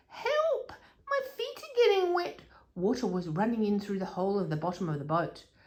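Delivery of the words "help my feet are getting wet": very high, squeaky mouse-like cry. Reading a story aloud, voicing the little mouse Horatio in the boat: squeaky Horatio voice. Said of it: "but Horatio squeaked".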